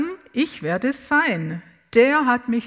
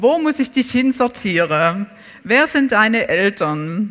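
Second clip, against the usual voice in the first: usual speaking voice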